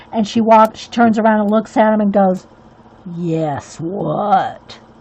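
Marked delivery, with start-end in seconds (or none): 3.2-4.8 sinister, menacing, evil-sounding voice. Retelling a cartoon where a mom scolds her son: imitating a mom turning evil. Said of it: "Like she turned all evil".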